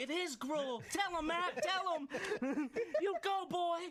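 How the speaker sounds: very high, slow, drawn-out cheering. Imitating a listening mom who takes one side: imitating mom cheering. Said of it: "she's cheering".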